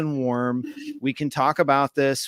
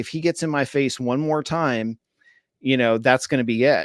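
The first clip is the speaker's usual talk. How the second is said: ordinary talk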